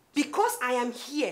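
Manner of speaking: plain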